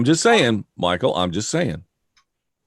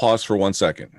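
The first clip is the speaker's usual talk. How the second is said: normal talking voice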